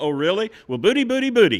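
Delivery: put-on very high, very loud, swooping teasing tone. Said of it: "so I go".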